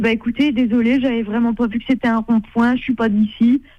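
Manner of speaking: ordinary delivery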